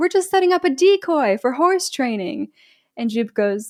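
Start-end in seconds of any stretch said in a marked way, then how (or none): 0.0-2.5 mock, high, shouted call across a distance. Storyteller recounting what one character shouts to another, retelling a shout. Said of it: "And Emerald shouts".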